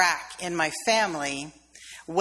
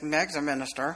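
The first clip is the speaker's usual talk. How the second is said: quiet, soft aside said sidelong; 3 semitones lower than usual. Retelling what a cousin standing behind said, soft sideways voice. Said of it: "in a soft sideways voice".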